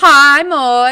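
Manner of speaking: very loud, high-pitched, belted character voice. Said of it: "in Donut's voice".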